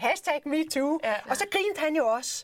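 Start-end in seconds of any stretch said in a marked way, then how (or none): 0.0-1.0 acted laughing speech, pitched higher. Retelling what she said to him back then, saying it laughing. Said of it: "mens jeg griner".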